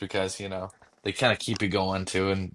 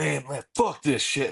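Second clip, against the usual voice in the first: pitched-up, aggressive tough-guy voice, spoiling for a fight; 7 semitones higher than usual. Describing an actor's usual roles to a listener: put-on Jon Bernthal tough guy. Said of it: "he's ready to fucking beat someone's ass".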